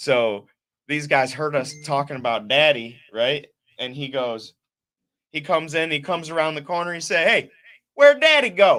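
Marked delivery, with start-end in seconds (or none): 7.2-8.8 put-on big, thick Southern accent, very high and booming. Retelling a guy coming around the corner and speaking, in a big Southern accent. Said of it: "with this big old Southern accent".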